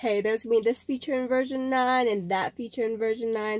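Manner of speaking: ordinary talk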